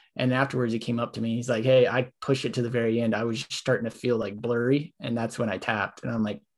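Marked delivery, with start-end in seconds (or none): none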